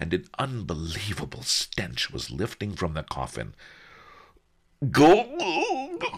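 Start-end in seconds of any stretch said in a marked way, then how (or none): 4.9-6.0 very high, drawn-out gagging, retching cry. Narrator voicing a customs chief beside a stinking coffin: gagging. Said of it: "gagged the chief of customs".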